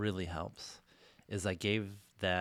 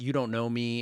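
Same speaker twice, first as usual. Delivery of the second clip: loud, shouted, yelled outburst; 4 semitones higher, 7 dB louder than usual. Retelling a moment of answering a negative inner voice: imitating own yell. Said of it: "I have yelled out".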